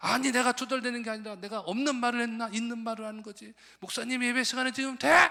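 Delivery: put-on high, loud, indignant old woman.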